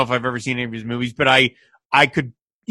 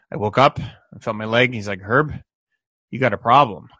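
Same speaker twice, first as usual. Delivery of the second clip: deliberate, quiet, purposefully flat deadpan monotone; 2 semitones lower than usual. Describing an actor's line reading in a scene, imitating his purposefully monotone delivery. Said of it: "very kind of purposefully monotone".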